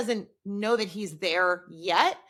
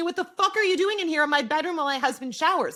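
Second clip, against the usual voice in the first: put-on full-on yelling, screaming tirade; 6 semitones higher than usual. Retelling a show scene where Yasmin confronts someone: imitating a screaming character. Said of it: "Yasmin comes in and screams at Whitney".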